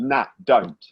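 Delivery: ordinary delivery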